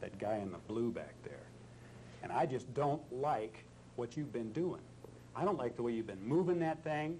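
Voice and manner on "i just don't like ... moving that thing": irate, nasty, mean angry delivery. Acting out anger at a guy in blue, ignoring the camera: angry. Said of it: "now we're going to show him as a mean, angry man".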